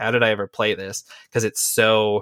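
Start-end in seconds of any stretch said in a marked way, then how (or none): none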